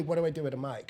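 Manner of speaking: ordinary talk, nothing marked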